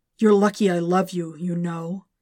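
whispered. In bed, the symbiote speaks inside its host's head: whispered. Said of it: "whispered Venom in his head".

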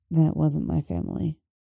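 softly spoken, low-key, quiet. Narrating a man's reply to a woman after her awkward remark; quiet. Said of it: "he tells her quietly".

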